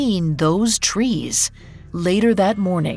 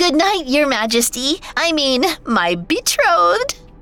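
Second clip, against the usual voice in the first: high-pitched, excited squeal; 8 semitones higher than usual. Ivona, barely containing her excitement, says good night: squealing. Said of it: "she squealed".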